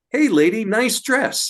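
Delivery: very high-pitched, tiny male voice. Telling what was heard at the fort, quoting a voice: little male voice. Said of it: "this little male voice say".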